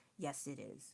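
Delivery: hushed, earnest, serious whisper. Retelling answering a child who says it's not real: imitating own serious tone. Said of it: "I could sound serious if I put enough effort".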